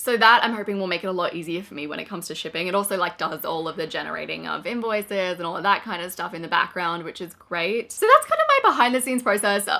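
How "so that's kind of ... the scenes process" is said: voice rising very high and loud. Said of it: "wow, my voice went very high then".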